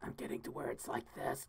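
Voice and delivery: hoarse, raspy, breathy near-whisper. Talking to chat while the throat is getting sore: raspy sore-throated voice. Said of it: "my voice is raspy".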